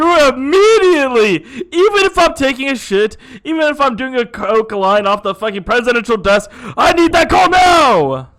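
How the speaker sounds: mock angry screaming. Acting out a president yelling at an intern over a missed call: imitating screaming in anger. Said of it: "He's like screaming in an intern's face".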